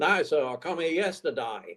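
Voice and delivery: put-on Australian accent. Telling a joke about a wounded soldier, quoting him: australian soldier accent. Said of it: "And the Australian said".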